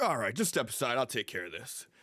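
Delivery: booming, loud, nonchalant casual voice. Voicing a character who steps in to handle a threat: booming nonchalant voice. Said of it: "you hear Vardrak's voice boom out".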